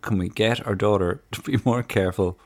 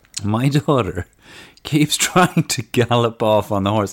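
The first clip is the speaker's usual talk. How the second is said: loud, laughing through the words; 3 semitones higher, 5 dB louder than usual. Speaker reads an email aloud: laughing while talking. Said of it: "I'm sorry for laughing".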